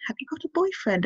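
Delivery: condescending, patronising tone. Describing getting the pill, the speaker imitates how she was questioned: mock-condescending. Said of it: "can you say that a little less condescendingly?".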